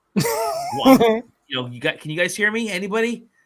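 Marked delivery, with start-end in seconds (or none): 2.0-3.2 loud yelling, calling out. Recounting being cut off from the group, reenacting yelling in the house. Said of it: "I'm like yelling in my house".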